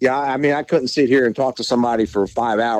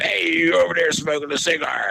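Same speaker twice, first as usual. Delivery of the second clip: put-on pitched-up old Irish accent; 6 semitones higher, 3 dB quieter than usual. Retelling what a retired policeman called out to him, in his old Irish voice. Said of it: "in his old Irish voice".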